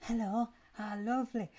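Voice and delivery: badly done upbeat voice, bright, high-pitched and loud. Describing how the show wrote her, then a terrible upbeat Doctor impression. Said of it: "That was a terrible impression".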